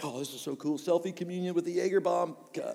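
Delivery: normal talking voice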